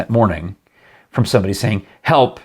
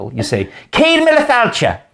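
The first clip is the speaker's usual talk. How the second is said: very high, swooping, hollered yell; 14 semitones higher than usual. Retelling yelling a name back at the man, imitating Father Michael. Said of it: "I'm trying to do my imitation of him".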